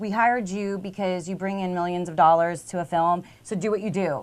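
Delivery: normal talking voice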